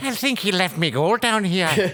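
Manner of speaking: shrill put-on mix of Irish and Spanish-style accents.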